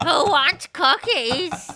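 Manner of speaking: very high, shrill, very loud fairy-tale witch voice. Responding to someone's impression, the speaker does the Hansel and Gretel witch voice. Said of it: "You sound like the witch in Hansel and Gretel".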